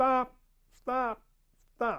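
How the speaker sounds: urgent shouted yell, very high and loud. Recounting trying to halt a man who didn't hear: retelling a yell of 'Stop!'. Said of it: "and I'm yelling".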